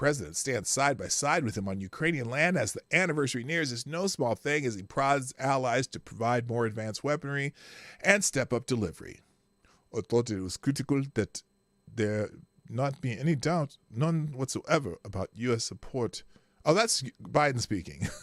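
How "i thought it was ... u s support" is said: put-on Eastern European accent. Reading a news quote aloud in an Eastern European accent. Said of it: "I'm doing uh, an Eastern European accent".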